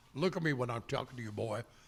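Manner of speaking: fast, low, stern delivery.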